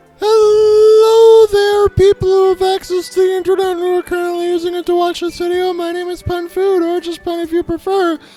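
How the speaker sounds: stuck in falsetto. Video host introducing himself to viewers after his voice cracked, stuck in falsetto. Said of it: "now I'm up here in my falsetto".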